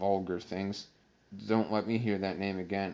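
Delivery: plain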